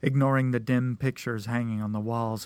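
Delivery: plain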